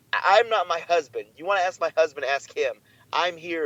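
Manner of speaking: ordinary delivery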